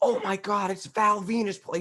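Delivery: drawn-out, high-pitched, loud, emotion-filled call. Imitating a commentator bringing emotion to a call: imitating JR's emotional call. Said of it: "used to bring emotion".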